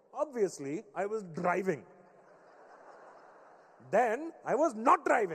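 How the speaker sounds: heavy, thick, put-on Indian accent. Retelling your dad's call about his broken-down car, imitating dad's thick Indian accent. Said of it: "how thick my dad's Indian accent was".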